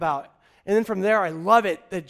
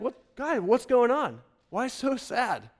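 feigned cluelessness, played-dumb voice; 2 semitones higher than usual. Retelling how he played dumb with them on the road; mock-clueless, playing dumb. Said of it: "he kind of plays dumb".

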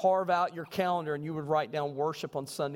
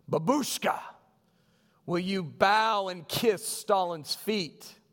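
acted-out hard, severe, very harsh soldier voice; 3 semitones higher, 3 dB louder than usual. Telling a story, quoting a soldier speaking to an elderly lady, retelling a very harsh tone. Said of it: "in a very harsh tone".

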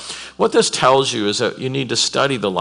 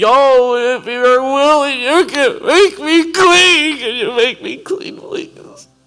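very high, tearful, desperate weeping, acted out; 6 dB louder than usual. Retelling the leper coming to the Lord Jesus: acting a weeping, begging plea. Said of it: "just weeping, begging".

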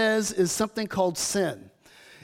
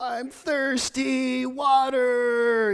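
put-on little child voice, higher and slower; 3 semitones higher than usual. Pastor retelling his child waking at night, imitating Micah's pathetic little voice. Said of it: "poor, pathetic little voice".

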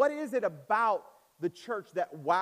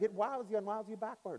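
put-on British English accent; 4 semitones higher, 6 dB quieter than usual. Retelling what Alan said this weekend: imitating Alan's British accent. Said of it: "in his British accent".

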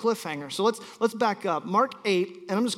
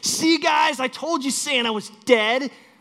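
put-on child shout, much higher; 6 semitones higher, 5 dB louder than usual. A parent retells a son shouting to a room of seven-year-olds; imitating a child shouting. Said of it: "turns around to a room full of 20 other 7-year-olds and shouts".

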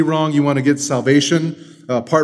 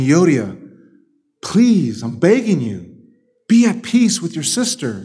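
begging, imploring tone with swooping pitch. Acting out the letter writer addressing one woman face to face: imitating a plea. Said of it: "He's pleading with them".

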